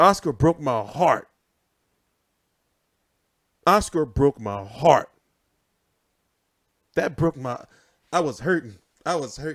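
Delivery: mock tearing up. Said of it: "I'm tearing up now".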